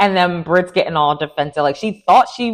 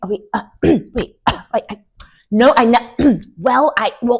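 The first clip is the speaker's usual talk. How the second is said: high, halting stutter with broken-off false starts; 5 semitones higher than usual. Retelling a reality show scene, quoting a flustered answer: imitating stuttering.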